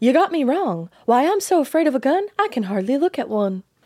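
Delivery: put-on mid-Atlantic accent turning Southern. Quoting a woman denying any part in the robbery, in a put-on Southern-tinged transatlantic accent. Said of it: "I automatically go Southern when I try to do an accent".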